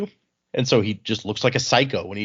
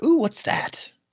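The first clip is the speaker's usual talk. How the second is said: put-on gentle, soft, very high young woman's voice; 12 semitones higher than usual. Reader voicing a little wind spren in the story, soft feminine voice. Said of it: "a soft feminine voice is like".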